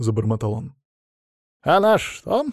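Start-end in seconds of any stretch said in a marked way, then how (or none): 1.6-2.5 sneering, snide jab, pitch rising. Adamych cuts into Vasily Pavlovich's faltering mumble: snide question. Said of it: "с ехидной ухмылкой спросил Адамыч".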